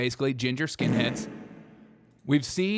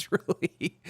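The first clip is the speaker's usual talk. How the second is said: high, laughing voice.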